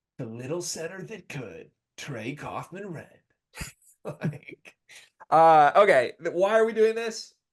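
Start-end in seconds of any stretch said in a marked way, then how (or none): 0.2-3.2 soft, dramatic movie-trailer voiceover narration. In a conversation, the speaker launches into a movie trailer voiceover voice. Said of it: "That's the only voice we can talk".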